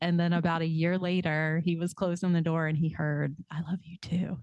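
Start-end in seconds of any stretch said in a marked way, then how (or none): 3.5-4.4 imitated whisper. Retelling answering a stepdad's goodnight for the first time: retelling a whisper. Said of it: "I, like, whispered to him".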